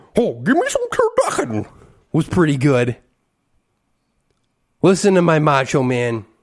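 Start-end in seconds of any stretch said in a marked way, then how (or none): 0.2-1.7 high, swooping football commentator voice. Showing a terrible John Madden impression again: John Madden impression. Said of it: "my John Madden".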